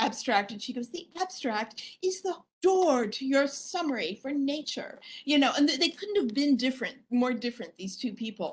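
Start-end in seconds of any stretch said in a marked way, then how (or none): 0.9-5.0 put-on prim, proper, slow English accent. Retelling what another woman said, imitating her English accent. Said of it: "talking in her in her English accent".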